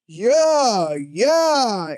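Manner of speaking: cheerleader whoop. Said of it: "then you have the cheerleaders".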